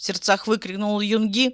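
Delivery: plain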